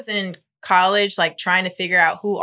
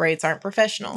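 normal talking voice

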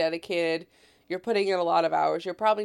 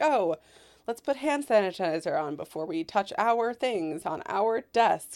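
ordinary talk

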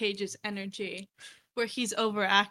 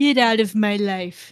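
booming, very slow, word by word; 10 dB louder than usual. Showing the others a Donald Trump impression. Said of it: "That's my Donald Trump impression".

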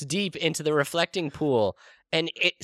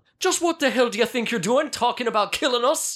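high-pitched, confrontational, raised voice; 6 semitones higher than usual. Voicing a character confronting Gollum: Samwise Gamgee voice. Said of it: "Samwise Gamgee taps on the pale shoulder".

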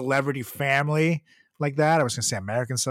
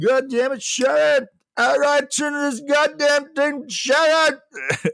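put-on rock star yelling, higher and louder; 13 semitones higher, 6 dB louder than usual. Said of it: "he's like".

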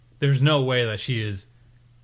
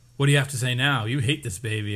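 plain

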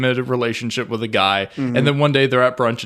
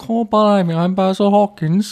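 fake British accent, higher pitch; 8 semitones higher, 3 dB louder than usual. Joking about an actor's British accent, doing a put-on British accent. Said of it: "He does a good British accent".

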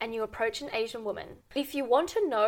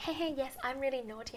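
put-on, tongue-in-cheek, flirty voice; 2 semitones higher, 9 dB quieter than usual. Acting out a possible reply to a man's question: mock flirtatious. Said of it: "flirtation, be like".

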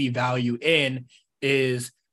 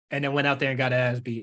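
ordinary talk, nothing marked

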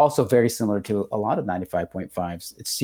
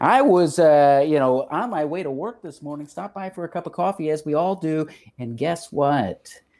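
pitched-up, patter-style morning radio DJ voice; 6 semitones higher than usual. Doing a morning radio show bit, in a radio jock voice. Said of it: "like a radio jock".

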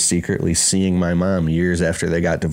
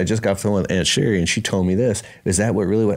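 ordinary delivery

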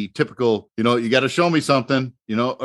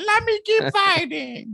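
very high, swooping, pleading whine. Imitating the beaten fighter begging to continue: imitating a fighter whining. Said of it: "nobody's accent sounds nice when you're whining".

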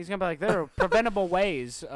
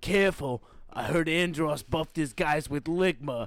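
put-on New York accent, lower pitch; 4 semitones lower than usual. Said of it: "the New York accent that they do for Falco".

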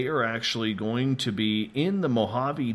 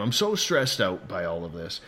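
normal talking voice

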